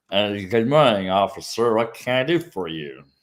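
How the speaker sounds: mock drunken, slurred speech. Imitating a driver stopped by an officer: imitating drunk slurred speech. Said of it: "slurred speech is a very common phenomenon".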